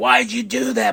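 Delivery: mock furious, high, raspy screaming yell. Recounting Bayley alone in her locker room; retelling Bayley screaming. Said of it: "Bayley's just screaming at herself".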